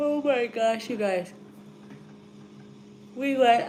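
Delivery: talking through a yawn. Speaker telling viewers about a trip, tired, yawning while talking. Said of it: "I'm sorry, I'm yawning".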